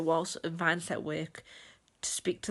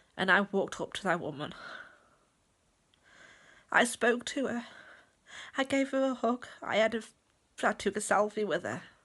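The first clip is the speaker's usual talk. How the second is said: tearful, crying while talking; 4 semitones higher than usual. Recounting meeting a woman again at a network marketing event, crying while speaking. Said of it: "I don't know why I'm crying".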